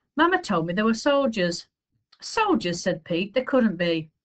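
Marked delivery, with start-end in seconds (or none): none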